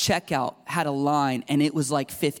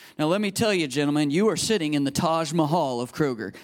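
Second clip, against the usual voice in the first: plain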